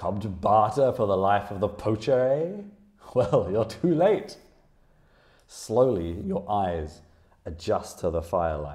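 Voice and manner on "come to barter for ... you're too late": big, resounding, booming call from afar. Narrating a scene, a warrior calls out from the far end of the room, booming voice. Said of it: "a voice booms from the far end".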